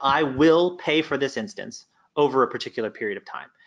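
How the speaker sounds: ordinary talk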